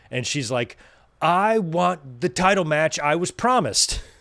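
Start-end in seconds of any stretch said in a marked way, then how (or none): 1.2-4.0 put-on slow, high, funny little kid-like broken English. Retelling Io Sky talking back there, in her funny little broken English. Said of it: "that funny little broken English".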